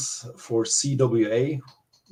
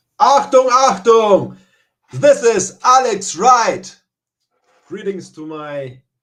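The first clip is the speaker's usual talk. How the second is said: fierce, very loud, booming wrestling promo voice; 10 semitones higher, 10 dB louder than usual. A wrestler asked how he is greets his Canadian fans, intense wrestling promo. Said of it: "That's more of an intense promo".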